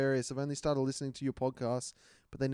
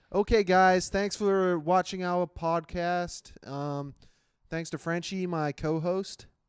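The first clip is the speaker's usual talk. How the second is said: put-on American accent, raised volume and high pitch; 5 semitones higher, 5 dB louder than usual. Podcast host closing the episode, asked to do his best American accent. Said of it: "do your best American accent".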